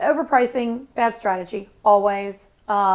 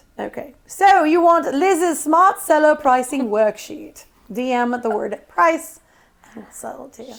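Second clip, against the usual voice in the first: put-on British accent, carefully and clearly enunciated; 3 semitones higher, 4 dB louder than usual. Entertaining the others, she switches into a British accent: put-on British accent. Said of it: "I can articulate better when I speak with a British accent".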